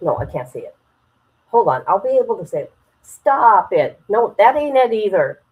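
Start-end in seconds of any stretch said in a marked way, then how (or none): 3.0-4.0 raised, attempted Boston accent. The speaker tries saying the phrase again, attempting a boston accent. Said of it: "trying to talk in an accent of people in Boston".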